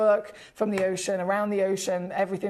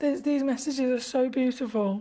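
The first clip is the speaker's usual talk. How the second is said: tearful, crying voice, higher pitched; 5 semitones higher than usual. Reading out condolence messages from viewers, crying while talking. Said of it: "I'm crying now".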